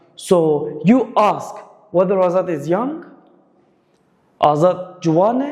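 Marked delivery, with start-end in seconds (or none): 4.4-5.5 Juane stressed, pitch rising at the end. Showing how to ask whether Azad is young: stress and higher pitch on Juane. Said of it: "the stress is on Juan".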